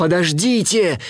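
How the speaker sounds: calling out loudly. Narrator voicing Kinai as the geese fly off: shouting after them. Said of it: "закричал им вслед Кинай".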